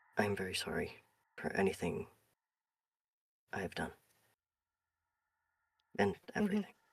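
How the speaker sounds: very quiet, hushed, barely voiced. As Vanta leaves, he looks back at Davros and speaks very quietly. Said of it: "he says very quietly".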